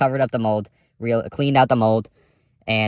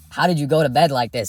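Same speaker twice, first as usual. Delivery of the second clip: play-acted raised, high-pitched voice; 5 semitones higher than usual. Retelling questioning a tenant about a cold house: imitating his own raised voice. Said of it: "I had raised my voice".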